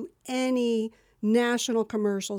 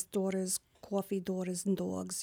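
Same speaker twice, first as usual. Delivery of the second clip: soft New Jersey accent; 2 semitones lower, 7 dB quieter than usual. Recalling an audition that asked for Jersey, the speaker demonstrates: New Jersey accent. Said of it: "So I'm talking like this".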